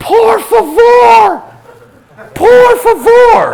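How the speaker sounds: very high, very loud, desperate, panicked shrieks. Retelling how Corey screamed for help in the water: retelling Corey's panicked screaming. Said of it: "And Corey's screaming".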